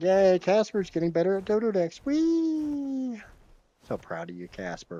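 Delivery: very high, half-sarcastic sing-song cheer. Cheering on someone's progress with Dodo decks: half-sarcastic praise. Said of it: "That's half not sarcasm".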